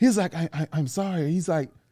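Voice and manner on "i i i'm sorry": quieter, mock, extremely apologetic man's voice. Retelling a man's reply after bumping into someone: imitating an extremely apologetic man. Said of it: "extremely apologetic".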